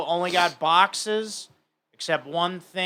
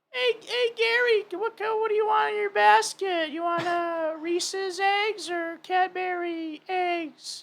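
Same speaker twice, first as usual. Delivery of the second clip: very high pitch, taken slow; 13 semitones higher than usual. Speaker shows a friend his take on the Easter Bunny, high Easter Bunny voice. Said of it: "the Easter Bunny has to have a high voice".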